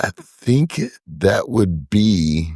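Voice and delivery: very slow, drawn-out speech. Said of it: "and I'm speaking really slowly".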